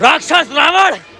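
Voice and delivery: enraged voice. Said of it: "Lakshman तेज क्रोध में और आंखों में अंगारे".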